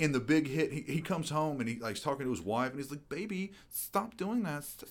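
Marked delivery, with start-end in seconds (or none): 3.1-4.6 very high, whiny voice with a lisp. Mocking an actor's line to his wife in a film, imitating a lisping whine. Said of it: "all this like lisping and this whining".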